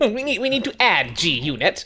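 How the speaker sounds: soft voice with heavy vocal fry throughout. Trying out Krang's best lines for the others, Krang voice with vocal fry. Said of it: "he does like a vocal fry".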